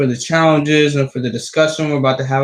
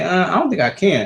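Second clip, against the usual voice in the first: put-on dismissive kid's voice, brushing it off; 4 semitones higher than usual. A parent acts out how children answer a request to tidy, imitating a child's reply. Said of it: "They're gonna be like".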